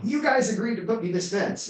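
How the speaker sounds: mock, very high, shrill screaming. Retelling a property owner complaining about a missing fence: imitating someone screaming. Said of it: "somebody's screaming at me going".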